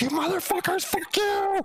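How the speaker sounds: mock, very high, sloppy drunken voice. Retelling calling a caller back while drunk: imitating drunk cussing out. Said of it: "just cussing him out".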